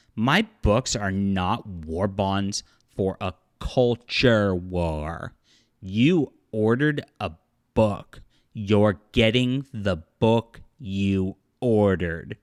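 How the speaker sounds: mock condescending, slow, drawn-out, as to a small child. Quoting an author's email to customers: mock-condescending, talking down. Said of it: "he talked down to the customer. The tone of voice he used was like talking to a kindergartner".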